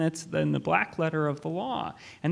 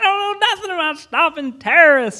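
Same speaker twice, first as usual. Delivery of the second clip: very loud, shrill, high-pitched shouting; 12 semitones higher, 12 dB louder than usual. Retelling a call from a former immigration officer: imitating a woman yelling. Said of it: "I just remember her yelling across the phone".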